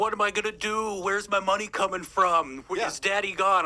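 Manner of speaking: acted, high, drawn-out, stretched-out screaming. Retelling a video the others showed: imitating John screaming. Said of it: "a video you showed where he's screaming".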